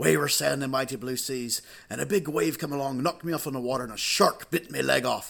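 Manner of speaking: pirate character voice. Retelling a funny encounter to listeners, voice the pirate's answer in a pirate voice. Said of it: "there was a real life pirate".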